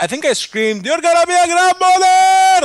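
mock screaming. Retelling hearing about the wedding and the baby; retelling a scream. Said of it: "I screamed".

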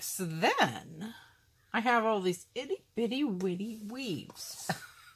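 put-on girlish, cutesy, girly delivery. Talking through a craft tutorial while adding small weaves, in a girly voice. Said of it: "that was a girly voice".

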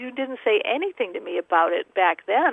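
ordinary delivery

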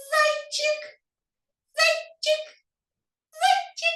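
tiny, very high, thin bunny voice. Leading children in calling the little bunny: thin little bunny voice. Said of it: "кажемо тоненьким голосочком".

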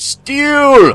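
steel yelled very loud, shrill, high, stretched out. Calling out a needed crafting material during a game: yelling. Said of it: "Why are we yelling steel?".

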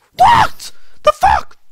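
piercing, shrill, very loud high shriek. A streamer playing a game spots a spider and screams. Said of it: "I screamed".

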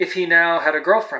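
ordinary delivery, nothing marked

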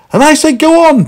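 breathless panting, very high and loud. Running from a big man who yells stop, he answers to himself, panting. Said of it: "panted Meddle to himself".

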